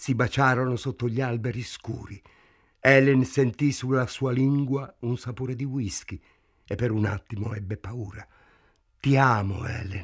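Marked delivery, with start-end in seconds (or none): 9.0-10.0 soft murmur, lower and slower. Frank speaks to Helen after they kiss, murmured. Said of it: "mormorò Frank".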